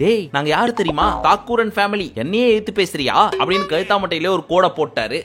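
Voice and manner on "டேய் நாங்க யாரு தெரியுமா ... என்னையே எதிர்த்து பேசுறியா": ordinary talk, nothing marked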